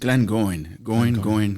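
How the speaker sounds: deadpan cartoon spy voice. Asked how the Glengoyne is going, answering in an Archer voice. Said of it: "in my Archer voice".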